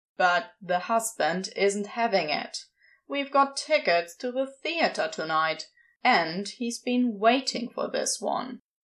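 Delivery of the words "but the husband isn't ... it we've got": ordinary delivery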